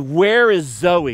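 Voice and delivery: fed-up, exasperated yelling scream. Retelling how she flopped on the bed and asked for zoe, acting out an exasperated scream. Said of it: "in an exasperated voice?".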